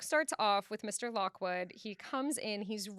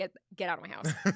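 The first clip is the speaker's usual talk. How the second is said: put-on angry voice, lower pitch; 4 semitones lower than usual. Retelling the novel, acting out Heathcliff ordering the guest out: imitating Heathcliff ordering someone out. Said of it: "And Heathcliff's like".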